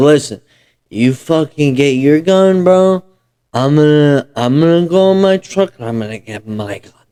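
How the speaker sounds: put-on mimicked drunk, slurred-style speech. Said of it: "he just comes out all fucked up".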